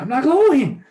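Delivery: very high, squeaky super-helium voice. Voicing a person after the drinks were grabbed: super helium voice. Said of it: "it comes down the super helium voice".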